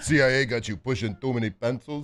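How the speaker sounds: put-on Austrian accent. Quoting a line from a movie scene: Arnold Schwarzenegger accent. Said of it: "your Arnold, your Austrian accent there".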